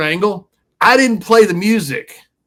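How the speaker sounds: usual speaking voice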